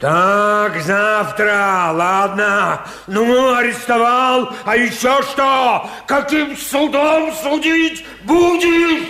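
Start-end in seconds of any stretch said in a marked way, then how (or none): 4.6-9.0 outright, high-pitched, angry yelling. Arrested man challenging the one who arrested him, shouting. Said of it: "Ты не ори".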